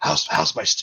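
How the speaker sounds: overeager and thrilled. Voicing a cook asking for feedback on his food: super excited for feedback. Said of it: "he's super excited for any feedback".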